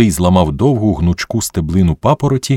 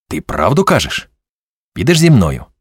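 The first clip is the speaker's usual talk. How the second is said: tense, strained voice. Rudy suddenly turns to Skipka, tense. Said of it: "якийсь незнайомий і напружений".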